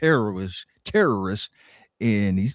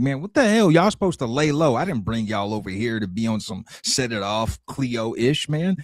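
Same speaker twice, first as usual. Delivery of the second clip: ordinary delivery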